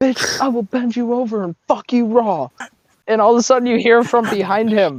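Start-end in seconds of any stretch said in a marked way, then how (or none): 0.0-2.5 acted-out brash, cocky, boasting trash-talk tone. Retelling a recruit's trash talk as he gets louder: imitating someone getting louder. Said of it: "he gets a little louder".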